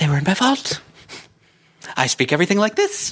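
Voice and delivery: high sing-song voice with wide, swooping pitch swings. Retelling what Bellatrix says on entering her vault: imitating Bellatrix's way of talking. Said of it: "That's how she talks".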